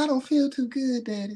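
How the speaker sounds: put-on sweet girl's voice, sounding sick and poorly. Retelling picking up a girl who was sick, quoting her: imitating a sick girl's voice. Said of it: "That's how her voice was".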